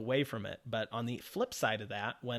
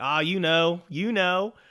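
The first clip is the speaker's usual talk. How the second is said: very loud, slow, slight Southern drawl; 7 semitones higher, 12 dB louder than usual. Retelling cold calling people for online sales: slight Southern accent. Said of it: "talked with a little bit of a Southern accent".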